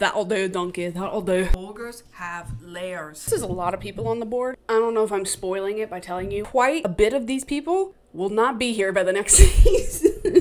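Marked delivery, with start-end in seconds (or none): 0.0-3.2 bad, weak put-on Scottish accent. Speaker admitting they can't do Scottish, attempting it anyway, bad Scottish accent. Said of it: "I can't do Scottish at all".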